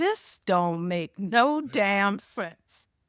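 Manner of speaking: muttering under breath with sigh. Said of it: "under my breath, give a deep sigh and say".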